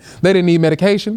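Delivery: ordinary talk, nothing marked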